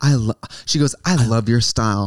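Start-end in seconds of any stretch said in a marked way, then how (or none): 1.0-2.1 mock earnest delivery, lower. Retelling what a fan said at a meet and greet: imitating an earnest fan. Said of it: "she was so earnest".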